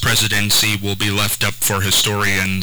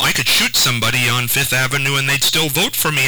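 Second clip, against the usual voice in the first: ordinary talk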